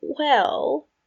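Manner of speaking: uneasy, faltering voice. Regulus, asked about his brother, begins his answer awkwardly. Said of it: "Regulus started awkwardly".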